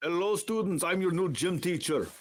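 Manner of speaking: put-on gangster character with Russian accent. Improvising a scene with another player, performing as a russian mafia leader. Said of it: "like a Russian mafia leader".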